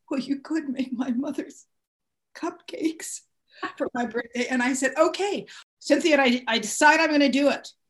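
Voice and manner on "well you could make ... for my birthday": put-on sniffling man's voice. Retelling what he said when her party came up, imitating Ken Meyer's sniffling voice. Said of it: "He says in the very Ken Meyer sniffling voice".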